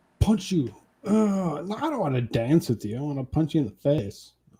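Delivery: seething, furious, threatening raging outburst. Speaker acting out gamer rage to see if it is enough, mock rage. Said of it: "Is that enough rage?".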